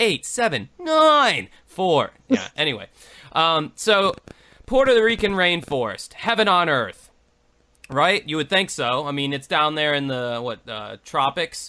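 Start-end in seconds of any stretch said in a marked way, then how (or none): 0.8-1.5 acted irritated, shrill stress on nine, very high. Imitating the recorded phone voice reading numbers again: mock-peeved stress on nine. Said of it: "he just gets peeved with nine".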